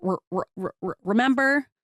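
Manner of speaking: slow stutter repeating the r of remember. Showing how a stutter repeats a sound: showing a sound-repetition stutter. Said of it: "the speaker repeats either sounds, syllables, or words".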